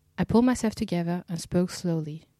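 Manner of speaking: plain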